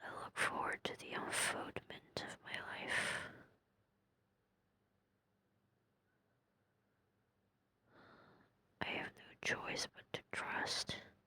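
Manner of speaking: whispered speech. Talking to viewers while resting a sore throat: whispering. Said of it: "the whispering really doesn't hurt my throat".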